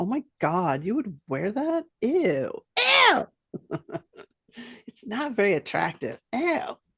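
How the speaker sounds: grossed-out, disgusted, judgmental tone. Comparing ways to say a line, the speaker shows their own version: disgusted, judgmental delivery. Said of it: "Mine's like".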